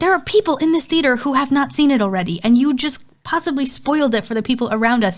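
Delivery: put-on angry scolding tone. Retelling what they said to a man who spoiled a film in the cinema, retelling an angry scolding. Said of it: "I was so mad".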